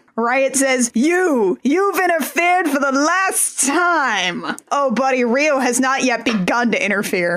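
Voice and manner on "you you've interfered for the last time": pompous cartoon captain voice, pitched higher. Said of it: "doing the Zap Brannigan voice now for Riot".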